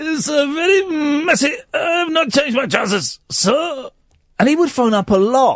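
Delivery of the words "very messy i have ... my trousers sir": put-on French accent, higher pitch. Imitating a caller who used to phone in: imitating a French voice. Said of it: "he was talking this French voice".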